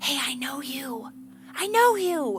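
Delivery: very drawn out, slow, pointed, accusing half-whisper. Imagining a woman half-whispering to a man she recognizes, imitating an accusatory half-whisper. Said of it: "I imagine that she whispered to him".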